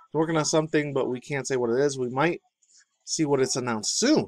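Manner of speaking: usual speaking voice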